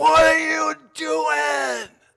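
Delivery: very high, shrill, ragged, raw all-out scream. Retelling screaming at a van driver who clipped a daughter: retelling own scream. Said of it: "I scream at the top of my lungs".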